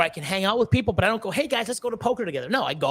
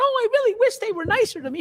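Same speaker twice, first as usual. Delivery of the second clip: very high, whiny, fake sobbing voice. Mocking the idea of being hurt by people who dislike him: mock crying. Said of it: "you think I'm fucking crying going".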